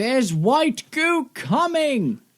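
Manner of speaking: high, slow, mock alarmed voice.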